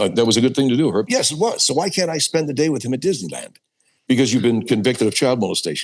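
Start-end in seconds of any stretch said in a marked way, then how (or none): 1.7-3.6 animated character voice with wildly swooping pitch. Voicing a character in a comic exchange: Herb Sewell character voice. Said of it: "Herb Sewell's voice was a combination of two voices".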